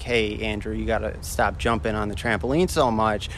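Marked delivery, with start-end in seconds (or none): none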